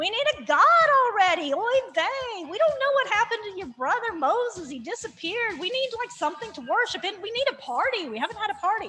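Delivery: put-on Yiddish-accented voice.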